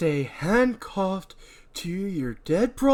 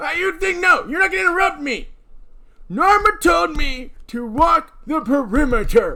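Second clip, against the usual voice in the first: put-on very slow elderly man voice; 8 semitones higher, 5 dB louder than usual. Actors run lines for a scene, one playing an old man; old man voice. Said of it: "I forgot what voice I was doing for him old man style".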